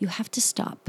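soft, unvoiced whisper.

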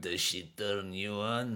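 low, soft, slow, menacing taunting voice.

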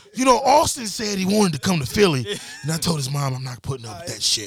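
raspy, cracking, swooping voice. On their Doc Rivers episode, urged to put the voice on: raspy Doc Rivers voice. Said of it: "You got to put that raspy voice".

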